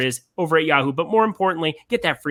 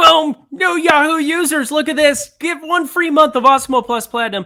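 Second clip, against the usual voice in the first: very high, loud voice shooting up unexpectedly; 12 semitones higher, 6 dB louder than usual. Speaker turns to a sponsor read for Ryan and listeners, voice going high. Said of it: "I don't know why my voice went so high".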